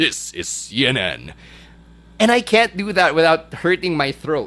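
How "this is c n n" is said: low, slow, soft, booming announcer voice of God. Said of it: "Yung parang James Earl Jones na".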